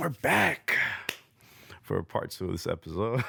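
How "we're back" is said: broad, animated put-on voice with swooping pitch. Returning from an ad break: Cartier Rob impersonation. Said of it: "I'm gonna do my best Cartier Rob impersonation".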